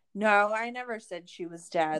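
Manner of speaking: ordinary talk, nothing marked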